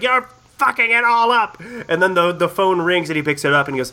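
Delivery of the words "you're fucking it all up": put-on heated, angry yelling, pitched high. Describing a favorite scene, quoting a character yelling at another: retelling a heated yell. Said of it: "He's just like he's like yelling at Lucas".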